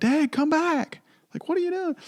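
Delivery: mock frantic, desperate, panicked screaming. Recalling screaming for dad to come back from the fire, retelling a scream. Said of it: "and I'm screaming".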